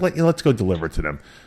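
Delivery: ordinary talk, nothing marked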